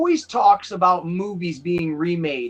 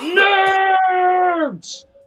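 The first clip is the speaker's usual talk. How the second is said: put-on movie-style scream, much higher; 12 semitones higher than usual. Showing how it's done in the Nerds movies, screaming like Ogre. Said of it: "you gotta scream it like Ogre did in in the Nerds movies".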